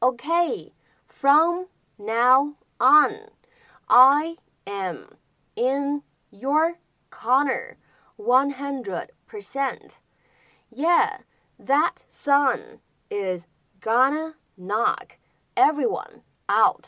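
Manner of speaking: very slow, careful, stretched-out, word-by-word reading.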